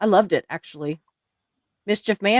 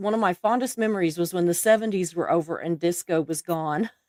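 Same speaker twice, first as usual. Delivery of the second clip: ordinary talk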